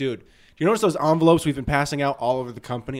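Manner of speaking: ordinary delivery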